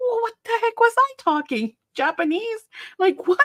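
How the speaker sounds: high-pitched, indignant disbelief. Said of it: "And I'm like".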